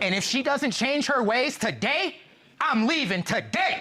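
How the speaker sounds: whole-chest delivery. In court, a man tells the judge his fiancée must change, said with his whole chest. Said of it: "You said that with your whole chest".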